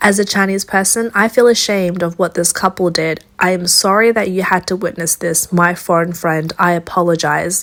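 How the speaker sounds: normal talking voice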